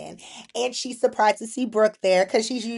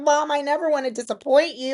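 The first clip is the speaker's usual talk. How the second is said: put-on tearful crying voice, higher; 5 semitones higher than usual. Retelling a soap scene where a daughter tells her mother: imitating someone crying. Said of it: "she's crying and she's just like".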